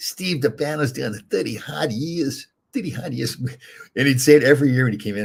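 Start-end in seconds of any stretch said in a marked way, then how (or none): 0.0-3.4 put-on slow Boston accent, pitched up, each word laid down. Recalling a security guy's yearly presentation line, imitating Frank Twuppy's Boston accent. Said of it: "with the Boston accent".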